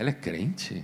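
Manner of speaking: put-on soft, hushed voice. Acting out one dinner guest murmuring to another, acting out speaking softly. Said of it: "Falando baixinho".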